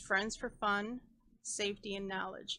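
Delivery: plain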